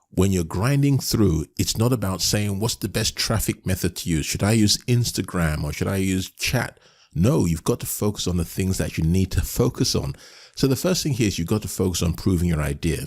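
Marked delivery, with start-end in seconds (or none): none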